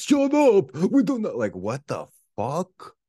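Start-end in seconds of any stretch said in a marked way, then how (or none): 0.0-1.4 very high, shrill, loud shout. Retelling how neighbors outside the speaker's apartment yelled, retelling neighbors' yelling. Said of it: "yelling like".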